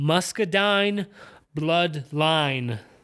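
exaggerated, slow, stretched-out Southern drawl.

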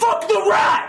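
very high, hyped-up yelling. Retelling how an audience member yelled during the show: imitating a heckler yelling. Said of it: "was yelling, like".

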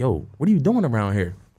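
usual speaking voice

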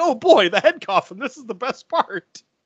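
high, gleeful, excited dad voice.

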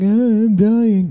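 very high sickly moan. Retelling what men say when they get sick: imitating a sick man complaining. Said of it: "when they get sick, they're like".

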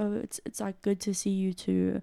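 put-on awkward, uncomfortable, halting child voice. Retelling a child's reply over a court video link, imitating an uncomfortable child. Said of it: "you can tell how uncomfortable this poor child is".

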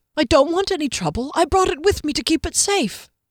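fearful voice climbing in pitch. Narrator voices the herbalist holding up the bottle to his captor, voice rising with fear. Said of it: "and so the one following the skinny herbalist did so with no difficulty, / he said with determination that Kier thought might be just a tad forced, / and so the one following the skinny herbalist did".

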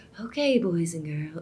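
hushed, gentle, very quiet half-whisper. Recalling trying to talk like a woman who half-whispered to her kids: imitating a soft half-whisper. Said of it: "I remember trying to be like".

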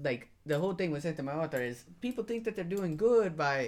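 plain

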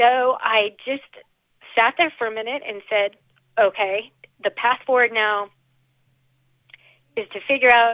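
choked-up voice catching with emotion. Speaker recalling the moment of deciding not to be sad anymore: getting choked up. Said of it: "I'm sorry, I'm getting choked up".

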